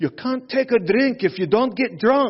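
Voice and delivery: put-on Scottish accent. Tell your sponsor what Mari said about drinking, doing a Mari impression in a Scottish accent. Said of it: "So that was my best Mari".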